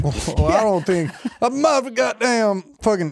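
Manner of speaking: put-on high, dragged-out drunken ramble. Imitating a very drunk person after ten drinks: Boomhauer voice. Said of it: "you turn into a Boomhauer".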